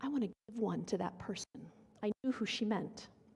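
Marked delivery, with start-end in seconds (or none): 0.0-1.5 low, hushed stage whisper. Retelling how a young woman leaned over with a request: imitating someone half-whispering. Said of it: "she whispers in my ear".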